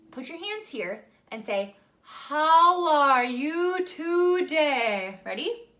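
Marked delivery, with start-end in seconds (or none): 2.1-5.2 said slowly, higher and louder. Showing a group how to say a daily phrase: slowed down. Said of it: "And now I want you to slow it down".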